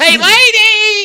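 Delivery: very high, very loud yell, "lady" drawn out. Describing a seizure that is not like this: Jerry Lewis voice. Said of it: "like a Jerry Lewis".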